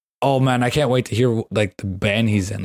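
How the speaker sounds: ordinary talk, nothing marked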